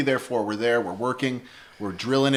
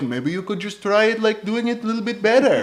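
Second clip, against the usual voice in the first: put-on patient, pitched-up Colombian accent; 8 semitones higher, 4 dB louder than usual. Retelling a bandmate's advice during drum recording: imitating Gustavo's Colombian accent. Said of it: "my very best impression of him".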